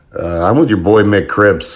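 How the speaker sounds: normal talking voice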